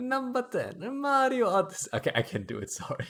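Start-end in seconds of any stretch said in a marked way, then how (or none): 0.0-1.9 very high-pitched put-on Italian accent. Reading a top-ten game list as a challenge, in an italian accent. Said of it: "so I'm gonna do it in Italian accent".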